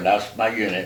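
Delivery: ordinary talk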